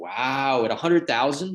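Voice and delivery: almost-sarcastic, overdone amazement with swooping pitch. Retelling how Brady reacted to donation amounts: imitating Brady's sarcastic wow. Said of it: "almost sarcastically".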